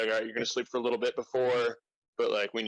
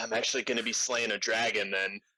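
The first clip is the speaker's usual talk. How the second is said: ordinary talk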